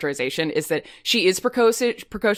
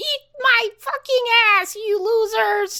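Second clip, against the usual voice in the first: very high little nerdy squeaking voice. Describing a little nerdy guy in voice chat, quoting him: high nerdy guy voice. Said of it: "he's got a high voice".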